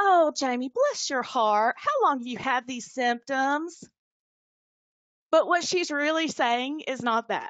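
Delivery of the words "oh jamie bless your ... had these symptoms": put-on sugary, sweet, all-nice Southern accent. Imitating how their mom would ask this question: imitating sweet Southern mom. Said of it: "she's Southern and she's going to say it all nice and sweet".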